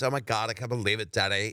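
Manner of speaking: put-on sixteen-year-old girl with typical Los Angeles speech. Retelling how the middle daughter talked at the time: imitating daughter's la speak. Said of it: "she kinda talked like this".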